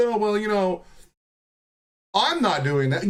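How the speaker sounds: mock sarcastic, mocking, dismissive parody. Ranting about political rhetoric, the speaker mimics the other side's denial: mocking imitation of them. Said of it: "They're like".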